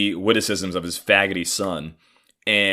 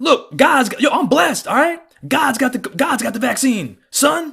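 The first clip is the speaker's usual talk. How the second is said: very high, shrill, foolish yelling rant; 3 dB louder than usual. Retelling an argument with his father about the pandemic: imitating his father yelling. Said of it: "just yelling like a fucking fool".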